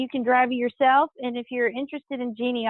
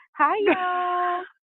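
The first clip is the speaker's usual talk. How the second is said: upbeat, bright, high, welcoming, lifting, y'all drawn out; 5 semitones higher than usual. Coaching someone on a welcoming greeting, the speaker demonstrates it: enthusiastic greeting. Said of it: "You have to be a little more enthusiastic".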